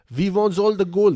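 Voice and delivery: put-on German accent, very high and very loud. Joking about aliens demanding gold, the speaker voices one: put-on German accent. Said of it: "German accent".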